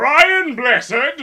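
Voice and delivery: very loud, very high-pitched yell. After failing at first to do the voice, give a yelling Brian Blessed impression. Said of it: "you can only do an impression of Brian Blessed while yelling".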